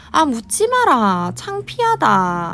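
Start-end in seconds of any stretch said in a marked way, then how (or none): 0.1-1.3 put-on Gyeongsang regional accent. Retelling what an older brother said, quoted in Gyeongsang dialect. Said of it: "저희는 이제 경상도니까 사투리를 좀 쓰겠습니다".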